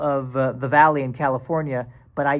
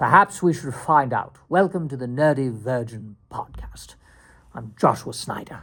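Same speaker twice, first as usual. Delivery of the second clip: fake British accent, podcast host style; 3 semitones lower than usual. Podcast host trying out an intro in a put-on British accent. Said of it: "this British accent is perfect".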